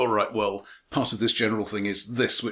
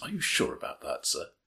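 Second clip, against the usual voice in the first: whispered, extremely polite, deferential; 3 semitones lower, 5 dB quieter than usual. Quoting a traditional line that soldiers say to an officer: imitating extreme politeness. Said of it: "Said in terms of extreme politeness".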